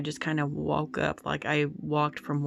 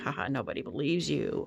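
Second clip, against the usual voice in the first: put-on taunting demon voice, laughing. Retelling a dream where a voice spoke through the speaker's mouth: demonic voice, laughing. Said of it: "with my mouth in this demonic voice and kind of like laughing at me".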